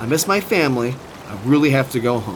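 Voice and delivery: plain reading voice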